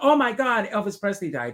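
high, imitated, scream-like cry. Retelling own reaction to news on the radio: imitating own past scream. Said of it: "I screamed".

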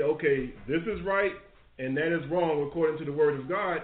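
plain

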